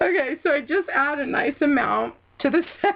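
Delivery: laughing while talking. Showing a glitter step after a word slip, laughing while talking. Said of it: "now I'm gonna not stop laughing".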